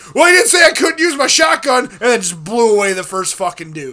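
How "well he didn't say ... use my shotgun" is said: very high, loud shrieked scream. Retelling what they screamed during a no-kill game mission: imitating a scream. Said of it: "if I just screamed".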